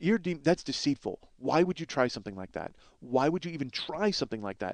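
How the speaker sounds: stern, reproachful scolding. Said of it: "he's dressing this guy down".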